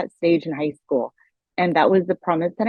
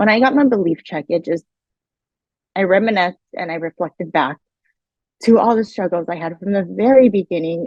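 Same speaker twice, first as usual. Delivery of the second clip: choked-up, tearful voice, fighting back tears, voice catching. A mother reminiscing to listeners about her past struggles, choking up. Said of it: "I'm trying to catch my voice right now".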